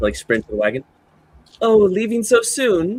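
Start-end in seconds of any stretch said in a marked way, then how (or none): 1.6-3.0 very high, loud, slow, drawn-out calling voice. Voicing a character as the players sprint to the wagon: calling out after someone. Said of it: "calls out after you all".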